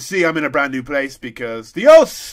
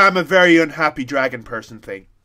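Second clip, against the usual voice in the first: ordinary talk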